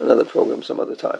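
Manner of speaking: rough, creaky hoarseness.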